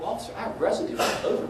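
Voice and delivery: ordinary talk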